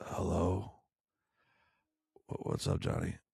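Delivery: play-acted, sick-sounding voice. Retelling a phone call where the employee answered sick: imitating Josh sounding sick. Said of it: "it sounded something like this".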